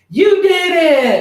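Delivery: put-on tiny two-year-old voice, very high and loud. Retelling hitting a ball in the backyard with his kid, in Kingston's cute little voice. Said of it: "in his cutest little Kingston voice".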